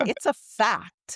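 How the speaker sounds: cocky, full of bravado, dead certain. Podcast host quoting a man's claim to a co-host, mimicking his bravado. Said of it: "said it with so much bravado".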